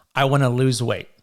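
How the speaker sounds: ordinary delivery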